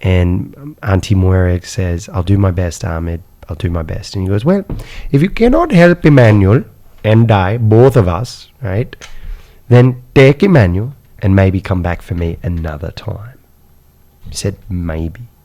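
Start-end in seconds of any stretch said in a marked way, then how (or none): 4.5-13.4 put-on full, convincing Indian accent, man's voice. Retelling what a man said to an aunt, imitating Ahmed's Indian accent. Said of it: "he had a perfect Indian accent".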